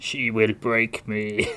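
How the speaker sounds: put-on slow worn-out voice. Quoting an action star worn out by a partner: Dolph Lundgren impression. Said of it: "all the Dolph Lundgren quotes".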